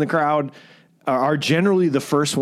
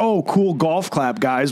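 put-on sarcastic voice. Imitating what a bandmate says to the band: imitating Jerry's sarcastic remark. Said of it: "it comes off very sarcastic".

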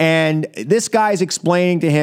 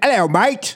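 Aussie accent, higher; 6 semitones higher than usual. Showing a quick sample of an accent: Australian accent. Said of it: "I could do a little bit of an Australian".

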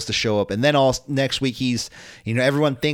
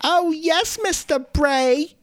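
very high, very slow adoring coo, every word stretched. Pitching a storyline where she co-hosts the funhouse: Harley Quinn voice. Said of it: "that's my best Harley Quinn person".

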